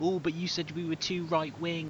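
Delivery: melty, whingeing, snivelling, whiny tone. Mocking how a disliked man talks: imitating a whiny voice. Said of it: "the whininess of his voice is like".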